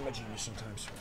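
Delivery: dry, sarcastic delivery, low and soft.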